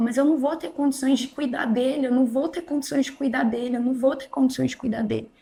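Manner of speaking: mock tearful pleading tone, repeated over and over, crying. Retelling own words after learning of the pregnancy: retelling own crying plea. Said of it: "E aí eu comecei a chorar e falava".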